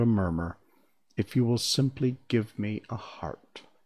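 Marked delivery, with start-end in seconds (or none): none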